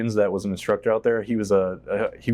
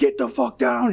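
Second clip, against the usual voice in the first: put-on full scream, pitched high. Retelling ordering airmen down amid blasts, retelling a screamed order. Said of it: "and like screaming".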